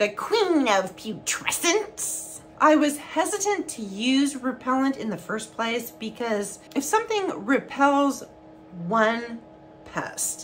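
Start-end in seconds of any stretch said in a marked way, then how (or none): 0.0-2.4 put-on old crone voice. As a Princess Bride fan, saying a phrase in Ancient Booer voice. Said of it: "I had to say it in ancient booer voice".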